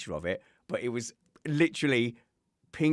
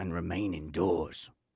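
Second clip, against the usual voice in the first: sinister ominous tone, much lower pitch; 5 semitones lower than usual. Closing the show with a sign-off reminder that comes out accidentally sinister. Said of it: "that was more sinister than I intended it to be at the end".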